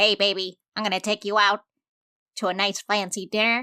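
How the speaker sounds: nasal put-on voice. Answering a question about date ideas in a character's voice: Grak voice. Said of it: "Is that Grak's voice?".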